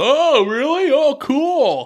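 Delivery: sarcastic mock jeering, very high and loud.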